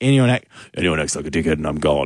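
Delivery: low, stern dad voice. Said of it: "which just sounded like my dad saying".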